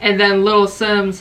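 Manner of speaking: plain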